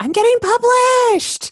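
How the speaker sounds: very high, very loud, excited shout of joy. Retelling running over to a classroom neighbor: imitating own past yell.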